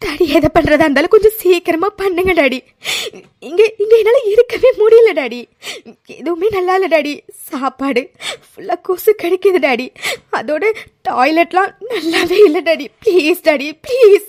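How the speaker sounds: crying while pleading, tearful. A detained daughter begs her father during a visit, crying while pleading. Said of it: "[name] baby நீ அழாதம்மா".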